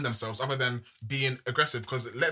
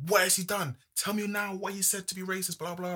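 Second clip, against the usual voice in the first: put-on high, aggressive, proper shouting; 6 semitones higher than usual. Retelling an argument on a live TV show: imitating Sharon shouting. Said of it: "proper shouting at her".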